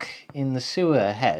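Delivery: ordinary delivery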